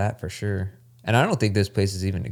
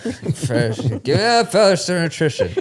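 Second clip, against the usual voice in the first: put-on old man voice, higher and louder; 8 semitones higher, 3 dB louder than usual. Joking about how a product name sounds, doing a grandpa at the bar voice. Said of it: "It sounds like your grandpa at the bar".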